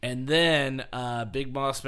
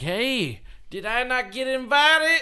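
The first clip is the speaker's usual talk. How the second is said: acted very high, drawn-out hollering yell; 11 semitones higher, 5 dB louder than usual. Retelling how a man yelled while driving up to the party, retelling his yell. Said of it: "he's like yelling".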